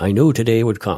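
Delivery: put-on Newfoundland accent. Reading out a quote from an acquitted murder suspect: Newfoundland accent. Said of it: "I'm gonna use a Newfie accent".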